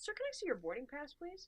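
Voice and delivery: acted courteous flight attendant voice, nice and lilting. Speaker retells a flight attendant asking a passenger for his boarding pass, imitating a nice polite request. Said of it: "just nice".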